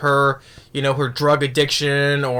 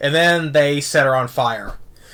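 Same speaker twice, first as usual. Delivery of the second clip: ordinary delivery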